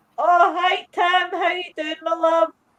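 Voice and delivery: acted, very high, loud, words breaking into laughter. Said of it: "the tears are coming down my eyes".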